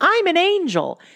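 very high-pitched shrieking scream. Recapping an episode, retelling a showgirl's funniest moment, imitating a high-pitched scream. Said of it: "screamed in this high-pitched voice".

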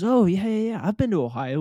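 put-on British accent. Retelling what a woman in the stands said: imitating a British accent. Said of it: "with the British accent and everything".

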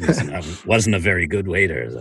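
acted-out muttering under the breath. Retelling what a woman's husband said about him, retelling a mutter under breath. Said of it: "under his breath".

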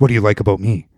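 acted, severe, hard-edged, very stern tone. Retelling a movie scene where a character suddenly asks: imitating a very stern question. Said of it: "very stern".

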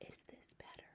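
very quiet, breathy, barely audible whisper. Sophie tries speaking under her breath so the BFG can bear it, spoken very softly. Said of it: "She spoke so softly she couldn't even hear her own voice".

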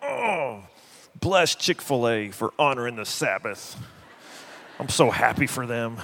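through gritted teeth. A speaker acts out his Sunday lunch reaction, retelling through gritted teeth. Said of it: "through gritted teeth".

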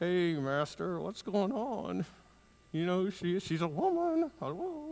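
put-on mutter without moving lips. Acting out the surprised disciples getting their master's attention, talking through clenched teeth. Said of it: "you just kind of talk through your teeth like".

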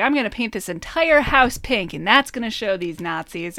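plain

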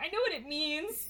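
high upset tone. Retelling a movie scene, acting out Ron's reply: imitating Ron getting upset. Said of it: "he gets all upset".

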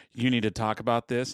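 ordinary talk

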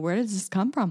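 ordinary delivery

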